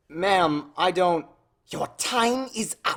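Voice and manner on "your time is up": high, menacing, hissed delivery. A woman confronts the student narrator over a grade, hissed. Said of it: "she hissed".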